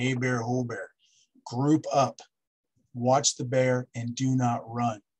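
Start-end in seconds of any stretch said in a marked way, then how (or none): 0.0-0.9 calm, composed, steady, even voice. Demonstrating how to speak when walking into a bear's space, calm tone of voice. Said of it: "Use a calm tone of voice".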